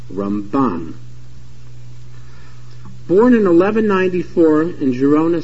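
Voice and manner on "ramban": stress on the final syllable of Ramban. Telling Nachmanides from Maimonides by name: stress on last syllable of Ramban. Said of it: "has the stress on the last syllable".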